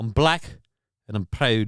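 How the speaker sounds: put-on Scottish accent. Retelling a film preview, the speaker quotes the saxophone player: scottish accent. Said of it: "with a Scottish accent".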